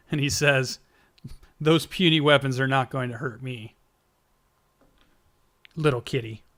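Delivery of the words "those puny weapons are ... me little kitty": taunting tone with chuckling. Voicing a figure taunting the party after an arrow misses: chuckling taunt.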